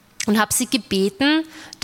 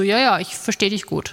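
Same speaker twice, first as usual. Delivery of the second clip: ordinary delivery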